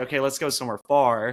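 plain

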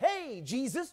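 needling sarcastic tone with masked mockery, taunting. Reading the brothers' words to Jesus as a mocking jab: sarcastic taunting tone, imitating someone. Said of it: "they're taking a poke at him".

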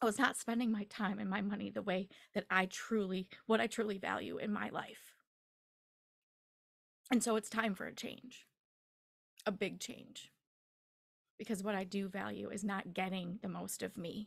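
emotion rising partway through the sentence. Speaking about their own life and a big change: getting emotional. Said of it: "I'm going to get emotional here".

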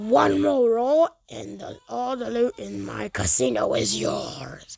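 booming voice with pitch swooping and swinging around. Narrating a story, voicing the casino's owner speaking to the boys, booming Devil voice. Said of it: "that's my devil impression".

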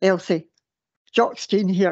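rough, gruff man's voice. Elsie recalls taking a phone call; the caller introduces himself, Joxtine's gruff voice. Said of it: "this gruff voice goes".

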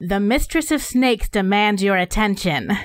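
proclaiming voice, called out across a distance. Stepping up next to Vesper toward the arguing people: calling out. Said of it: "and I call out".

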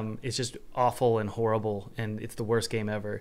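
normal talking voice

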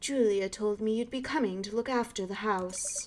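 put-on refined upper-class posh British accent. Voicing a character answering Miss Cross's question, posh British voice. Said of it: "you would have like a posh British voice".

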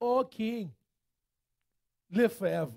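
put-on speech with a slight Trinidadian accent. Retelling the story of Daniel and the lions, voice Daniel's reply to the king in a Trinidadian accent. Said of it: "he sounded like he might have had a little Trinidadian in him".

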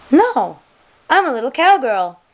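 put-on sweet, high, cutesy little-girl voice. Retelling what a little girl answered on a toy horse: imitating Susie, cutesy. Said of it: "in this little cutesy face".

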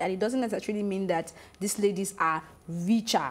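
ordinary talk, nothing marked

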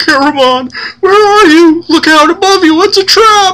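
very high, loud, fear-stricken, anguished wail. A man stumbling into view in fear, in an anguished cry. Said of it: "He cries out in anguish".

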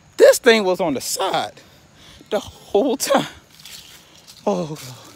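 winded, panting speech. Filming a video after nearly slipping, speaking out of breath. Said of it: "I'm out of breath".

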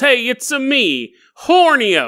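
high, slow, drawn-out cartoon voice. Retelling a scene where a character walks in: Mario voice. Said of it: "in walks Mario from Mario Brothers".

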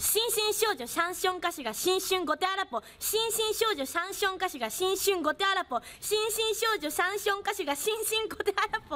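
rapid-fire tongue twister said very fast.

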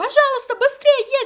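loud, high-pitched pleading shout.

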